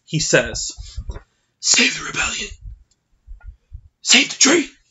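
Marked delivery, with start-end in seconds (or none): 1.5-4.6 raised, rough, raspy voice. Quoting a favourite line from a movie character, in a raspy voice. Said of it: "with his beautiful raspy tone".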